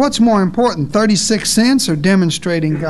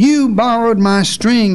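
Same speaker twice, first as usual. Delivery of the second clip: acted-out bellow in a fit of rage; 3 semitones higher than usual. Retelling a husband confronting his wife, retelling a bellow. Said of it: "he bellowed".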